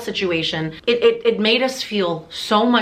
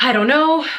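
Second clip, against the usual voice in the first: put-on sobbing, higher pitch; 5 semitones higher, 4 dB louder than usual. Retelling a panic over breathing with parents nearby: retelling own crying.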